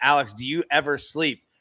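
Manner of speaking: normal talking voice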